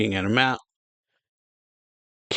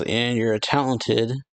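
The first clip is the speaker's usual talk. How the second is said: ordinary delivery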